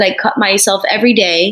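ordinary delivery

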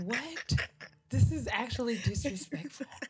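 high-pitched, genuinely offended disbelief. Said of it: "I'm like".

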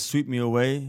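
usual speaking voice

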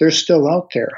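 half-whispered delivery. Quoting Toby, finger across his lips in the tent, in a half-whisper. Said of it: "and says in a whisper".

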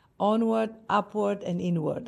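plain

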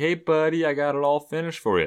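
happy, thrilled tone with pitch lifted up. Retelling a film scene, quoting Michael finishing the treehouse: imitating Michael sounding happy. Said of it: "he's so happy".

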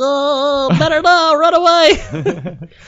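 very high little elf voice. Retelling the speaker's own reply to her greeting, in elf voice. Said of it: "elf voice".

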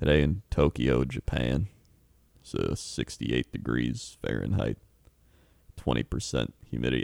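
soft ASMR-style reading voice. Imitating own asmr video of reading weather reports: asmr voice. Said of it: "in that type of voice like that".

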